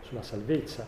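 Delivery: salvezza as a soft echo.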